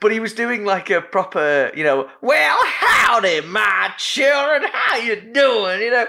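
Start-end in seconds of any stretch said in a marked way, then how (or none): 2.2-5.8 slow, high, ramped-up, ridiculous hammed-up cowboy drawl. Retelling how a man ramped up his cowboy act, put-on cowboy voice. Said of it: "he was ramped up the cowboy stuff".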